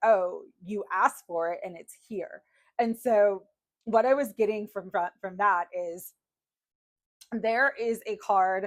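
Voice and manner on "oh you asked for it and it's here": mock snide, snarky, sarcastic tone. Retelling a snarky voice the speaker kept hearing, put-on snarky tone. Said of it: "I was hearing like a snarky voice".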